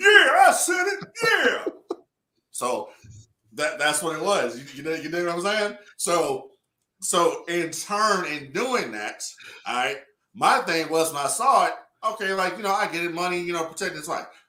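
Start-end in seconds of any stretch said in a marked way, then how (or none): 0.0-1.7 put-on drawn-out crying, very high, loud, teary wail. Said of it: "That's how he was, though".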